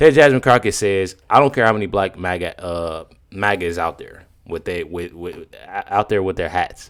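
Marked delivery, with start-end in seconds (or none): none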